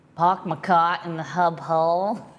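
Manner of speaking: slow, best-attempt put-on Boston accent. Practising local pronunciations, then a line in an attempted Boston accent. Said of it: "I'm going to say it in my best Boston accent".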